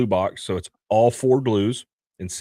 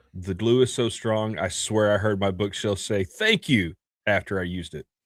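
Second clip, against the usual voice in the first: usual speaking voice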